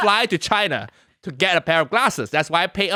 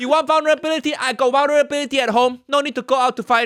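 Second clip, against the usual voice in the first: put-on mimicking voice, pitched higher; 6 semitones higher than usual.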